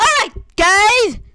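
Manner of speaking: very high, loud voice. Opening a video by greeting the guys: talking loudly. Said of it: "Why am I talking so loudly?".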